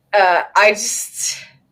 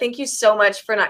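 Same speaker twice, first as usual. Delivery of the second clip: ordinary talk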